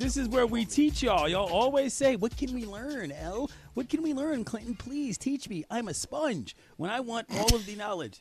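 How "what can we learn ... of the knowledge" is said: put-on little child's voice. Mimicking the audience asking to be taught: child's voice. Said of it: "That's a child's voice".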